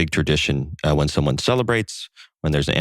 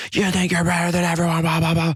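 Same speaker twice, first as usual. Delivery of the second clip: furious, yelled, insulting tone. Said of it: "And he starts yelling".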